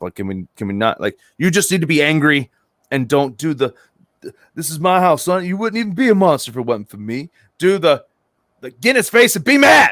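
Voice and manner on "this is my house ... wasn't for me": mock, cocky, swaggering tough-talk voice. Describing someone's trash talk to him, mocking a swaggering trash-talk voice. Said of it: "Don't use your swagger voice".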